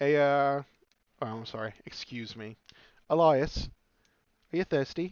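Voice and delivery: slow, put-on British accent. Playing a character greeting another character in a tavern: British accent. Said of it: "You don't have to have a British accent either".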